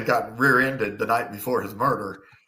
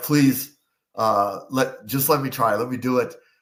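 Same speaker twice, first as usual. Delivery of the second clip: begging plea. Retelling begging a sergeant to take the case: imitating own begging. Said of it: "I begged my sergeant".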